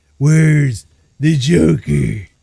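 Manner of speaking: loud demanding superhero voice. Describing how Batman questions people: Batman voice. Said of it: "he would just talk to you like this".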